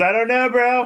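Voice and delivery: shrill, very high, loud put-on scream. Voicing Serwin answering a question in a game: screaming in character. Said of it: "Serwin screams".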